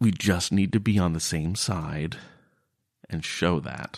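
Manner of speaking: mumbled quietly, as if to himself. Speaking as a character explaining to the others, under his breath. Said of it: "respond under his breath".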